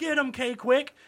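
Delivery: put-on wisecracking shout. Recounting a wrestling match, the speaker acts out his buddy calling to a wrestler: retelling a friend's yell.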